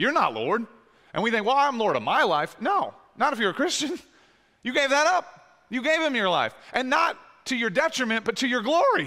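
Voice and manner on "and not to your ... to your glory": voice breaking and cracking mid-phrase. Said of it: "sorry, voice crack".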